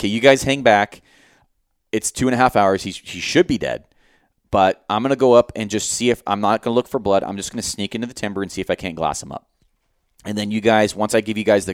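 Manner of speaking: normal talking voice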